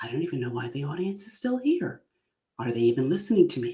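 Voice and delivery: quiet, hushed stage whisper in a little weird voice. Imitating a comedian half-whispering his inner thoughts on stage: Jim Gaffigan half-whispered inner voice. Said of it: "he whispers because he's talking with the voice in his head".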